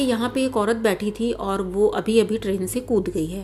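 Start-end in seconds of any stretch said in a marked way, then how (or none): none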